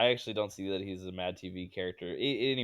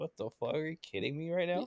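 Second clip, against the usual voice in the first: stunned, floored, taken-aback outburst, pitched up; 8 semitones higher, 5 dB quieter than usual. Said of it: "so taken aback by it would say it".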